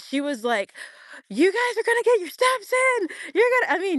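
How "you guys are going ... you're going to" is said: put-on yell, higher. Retelling a fitness influencer talking to her live crowd: imitating someone yelling. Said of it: "she was yelling at everyone".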